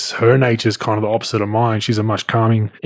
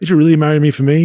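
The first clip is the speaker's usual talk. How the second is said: high, mocking, needling, sarcastic teasing tone; 5 semitones higher, 4 dB louder than usual. Retelling teasing one's wife: imitating own sarcastic teasing. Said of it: "me being kinda sarcastic asshole".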